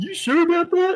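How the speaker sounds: mock skeptical, teasing, doubtful tone. Retelling how someone answered a serious remark: imitating someone's teasing doubt. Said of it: "someone would go".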